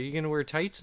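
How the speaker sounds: plain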